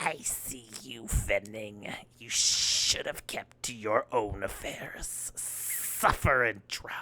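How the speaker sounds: rasping whisper, hissed, hushed and breathy. Narrator voices an unseen speaker addressing Fenning through the mist, raspy hissing voice. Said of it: "A raspy voice hisses".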